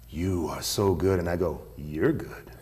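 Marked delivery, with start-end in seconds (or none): 0.1-1.2 acted, mock whispering. Retelling how a man pulled them in close, retelling a whisper. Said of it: "he whispers in my ear".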